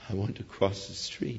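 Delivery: put-on quivering voice. Retelling a story, quoting a little girl answering a policeman: imitating a quivering voice. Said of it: "with a quivering voice".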